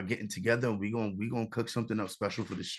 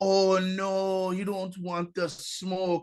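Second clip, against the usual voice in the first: put-on Jamaican accent, drawn out and pitched up; 9 semitones higher, 4 dB louder than usual. Retelling a reply to a funny commenter online, in a put-on Jamaican accent. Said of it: "I had like affected a Jamaican accent".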